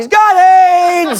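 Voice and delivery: very high blurt with "aids" drawn out. Retelling an interview answer, Donald Sterling blurting out. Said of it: "Donald Sterling just blurts out".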